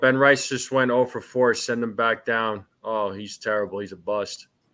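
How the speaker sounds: ordinary delivery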